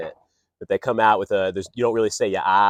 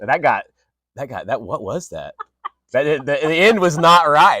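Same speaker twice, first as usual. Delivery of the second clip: ordinary talk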